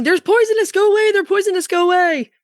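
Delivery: very high, loud yelling shout. Speaker recounting shooing a goose away from poisonous irises, retelling a yell. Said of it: "And I'm yelling".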